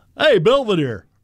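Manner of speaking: called-out, cartoon-dog-like character voice. Doing an impression of Bob Uecker walking into a room: Bob Uecker impression. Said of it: "here's Uecker walking in the room".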